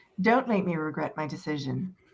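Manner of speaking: grave, deadly serious, no-nonsense delivery. Voicing a character warning a companion after a standoff: deadly serious. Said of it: "with fairly deadly seriousness and says".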